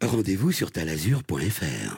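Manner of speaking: low, sweeping, put-on ad announcer voice.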